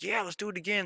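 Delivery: put-on high, eager child voice.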